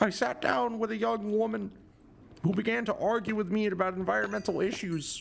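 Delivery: put-on voice, high pitched and creaky. Quoting a man's passage about a therapy session, imitating his voice. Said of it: "I'm gonna quote it in his voice".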